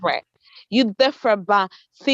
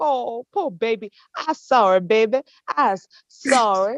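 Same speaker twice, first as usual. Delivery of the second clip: mock pitying, sympathetic voice. Mocking how others react with pity: imitating a pitying voice. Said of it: "Y'all feel sorry".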